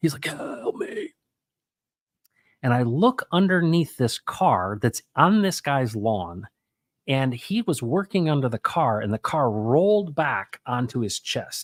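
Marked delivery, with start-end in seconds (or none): 0.2-1.1 strained, labored, breathy whisper. Retelling a man trapped under a car calling for help, imitating a labored voice. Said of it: "really labored voice".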